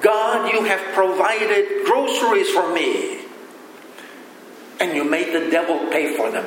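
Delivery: ordinary delivery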